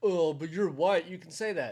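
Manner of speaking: ordinary talk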